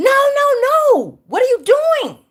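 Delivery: male voice, very high-pitched, shrill screaming. Retelling how the man screamed at her when she pressed the gas, imitating a man screaming. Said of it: "He's screaming at me".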